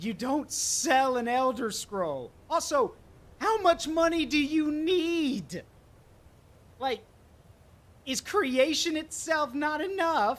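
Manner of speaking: loud, high, slow exasperated scolding.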